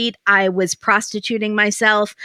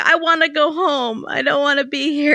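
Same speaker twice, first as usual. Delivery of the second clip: weeping through the words, pitched-up voice; 6 semitones higher than usual. Retelling a scene where Jasmine gets out of the car: imitating Jasmine crying. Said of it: "she's crying and going".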